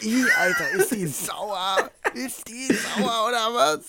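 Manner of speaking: very high, drawn-out, grossed-out whine. Retelling how Jakob reacted after drinking the milk: imitating Jakob's disgusted complaining. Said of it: "so richtig beschwert und richtig ins Gesicht verzogen".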